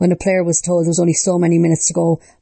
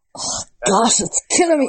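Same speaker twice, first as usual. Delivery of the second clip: pitched-up, forced out through clenched teeth; 5 semitones higher than usual. A host answering his co-host's question about his prediction: through gritted teeth. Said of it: "I'm saying it through gritted teeth".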